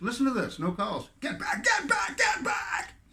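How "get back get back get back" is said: very high, drawn-out, repeated screaming. Retelling a phone call, the speaker acts out a man's words; retelling someone yelling. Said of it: "Just yelling".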